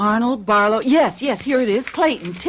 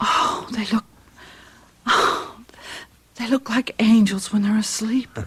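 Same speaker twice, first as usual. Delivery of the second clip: hushed whisper; 3 dB quieter than usual. Looking at sleeping children in a dark room, whispering. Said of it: "You don't have to whisper".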